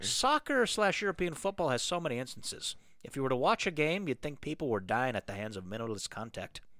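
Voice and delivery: put-on amateur Canadian accent.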